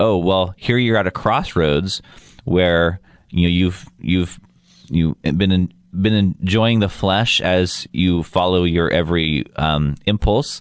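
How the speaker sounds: ordinary talk, nothing marked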